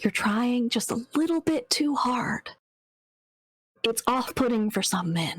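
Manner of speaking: whispering voice. Voicing a character leaning close to a girl: whispering in character. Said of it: "lean in close and whisper".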